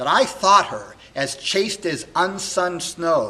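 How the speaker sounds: loud, swooping, wounded, impassioned, heartbroken fury. A young man alone, believing his beloved unfaithful, heartbroken and very angry. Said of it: "[name] on learning this, of course, is heartbroken and very angry, / [name] is a young man who was adopted sort of as a baby by [name]. [name]' parents had died, and he's raised by [name], who's the k".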